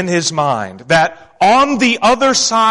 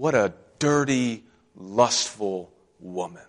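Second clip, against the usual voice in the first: put-on mutter under the breath, lower and quieter; 8 semitones lower, 10 dB quieter than usual. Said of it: "he muttered under his breath".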